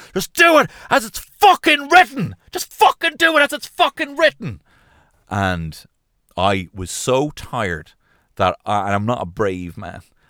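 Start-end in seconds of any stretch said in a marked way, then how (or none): 0.2-4.7 very high-pitched, shrill, loud screaming. Speaker recounts a person screaming at someone who asked a question; retelling a scream. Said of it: "this person just screamed".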